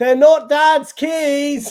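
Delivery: shrill, very loud, very high shout, keys stretched. Retelling shouting out from the audience at a magic show: retelling a shout. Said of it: "I shouted out in the, in the audience".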